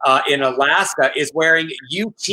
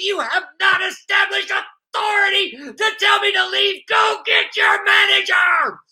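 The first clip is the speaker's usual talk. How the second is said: shrill, very high, screeching ranting yell. Acting out an angry customer confronting managers: imitating a man yelling. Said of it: "get into my character".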